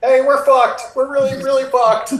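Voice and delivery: shouting in character. Voicing a fleeing drow knocking on a door: yelling in character.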